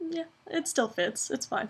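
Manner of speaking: quiet, shrugging delivery. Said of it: "I was just like".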